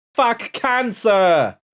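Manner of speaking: shrill, loud, high-pitched, shouted New York accent. Asked by a co-host to say it in a new york accent. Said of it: "say "fuck cancer" in a New York accent".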